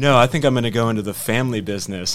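put-on ominous delivery. Discussing a miniseries, quoting a character's final line; mimicking an ominous line. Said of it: "he kind of says it like ominously".

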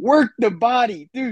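acted-out screaming yell. Recounting watching a fight's second round, retelling a scream. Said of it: "I was just screaming".

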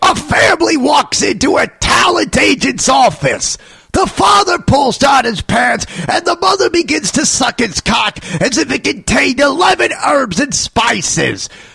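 very high-pitched comic voice. Auditioning for Colonel Sanders in an impression: Gilbert Gottfried impression. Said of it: "Gilbert Gottfried".

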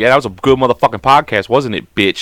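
coarse, foul-mouthed, crude bantering talk. Imitating partner's crude talk after the podcast ends. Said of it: "that's how she talks to me".

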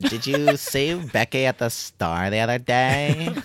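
put-on valley girl voice. Complaining about people who talk that way, the speaker imitates a Valley Girl voice. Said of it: "talks in that Valley Girl voice".

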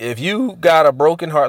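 voice breaking and catching. A speaker talking to listeners, voice cracking. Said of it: "look at my voice cracking".

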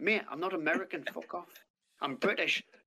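normal talking voice

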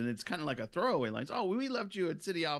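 ordinary talk

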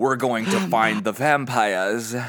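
put-on over-the-top, full British accent. Imitating an actor saying vampire: imitating Paul Bettany's British accent. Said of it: "he turns into the most British man ever".

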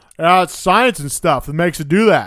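put-on, loud, booming, high-pitched talk through a full mouth. Retelling a dinner scene with Brock and Andrea, quoting Jesse: imitating Jesse with mouth full. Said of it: "just Jesse with his mouth full".

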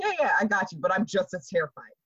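ordinary talk

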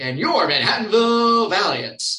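showy, loud, drawn-out game show host announcing. Reading through a script an hour before a game, in a game show host voice. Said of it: "in my game show host type voice".

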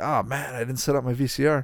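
ordinary delivery

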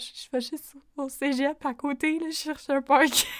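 voice cracking high in mid-sentence. Retelling a student facing a father with a baseball bat, imitating a cracking voice. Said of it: "Avec la voix cassante".

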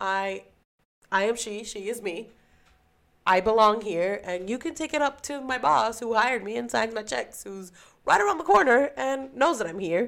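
calm, polite, businesslike professional office tone. Retelling what she said aloud to someone challenging her presence at work, in a professional voice. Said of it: "But in my professional voice".

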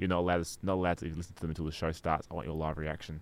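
put-on monotone voice. Retelling what Jack said about the parodies, in a monotone Jack impression. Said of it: "This sounds like a very monotone Jack".

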